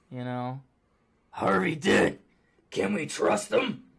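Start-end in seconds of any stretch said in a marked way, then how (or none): 1.3-3.7 loud, pitched-up, halfway growl. Talking about who plays the best Batman, doing a Batman growl voice. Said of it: "the growl. It's not quite the growl".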